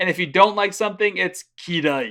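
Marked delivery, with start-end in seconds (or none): 1.6-2.1 kirai said darkly, deathly and gloomy. Teaching the word for dislike, deathly intonation on kirai. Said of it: "I added the uh, the the deathly intonation because you know you dislike something".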